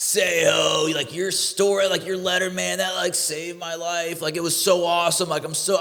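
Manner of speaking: put-on high, youthful, drunken yell, Seho drawn out. Retelling a drunk kid at a bar bathroom: imitating a drunk kid yelling. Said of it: "this kid drunk yelling at me".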